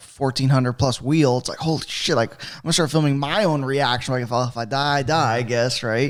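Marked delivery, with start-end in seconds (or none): none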